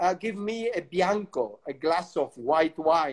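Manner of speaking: ordinary talk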